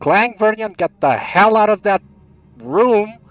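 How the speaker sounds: very loud, very high, shrill, piercing scream. Playing a character screaming a warning to Clang and Vernion: in-character scream. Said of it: "and I'm screaming".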